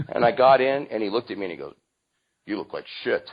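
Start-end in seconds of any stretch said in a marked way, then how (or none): 2.4-3.3 put-on gruff Italian accent, quieter. Retelling a man's words after getting into his car, in a gruff italian voice. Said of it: "in his very gruff Italian voice said".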